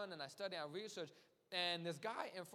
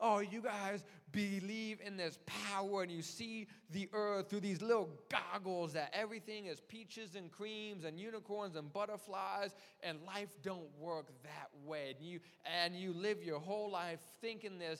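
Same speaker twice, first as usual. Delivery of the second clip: ordinary talk, nothing marked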